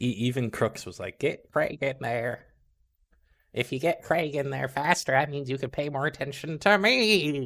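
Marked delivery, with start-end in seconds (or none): 1.2-7.5 put-on high old man voice, me drawn out. Imitating Crooks asking for Craig to be brought in: Crooks old man voice. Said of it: "got, like, an old man voice".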